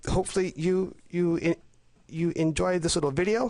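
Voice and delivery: stammering a little. Wrapping up the video for viewers, stammering a little. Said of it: "I may be stammering a little bit".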